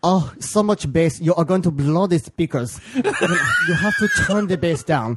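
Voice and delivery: put-on decent German accent, berating, scolding tone. Speaker retells how Roland, the German bar owner, scolded him, imitating Roland's German accent. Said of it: "I do a decent German accent".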